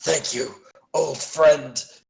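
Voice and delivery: sputtering, grunted out between gritted teeth. Game master voices Sozak, who sputters and grunts. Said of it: "Sozak sputters and grunts".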